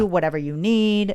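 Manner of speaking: usual speaking voice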